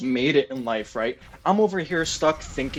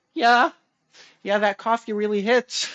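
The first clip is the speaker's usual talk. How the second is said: high, nervous, awkward, anxious; 7 semitones higher than usual. Retelling a chat at the urinal, imitating own anxious reply. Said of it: "I get so, like, anxious".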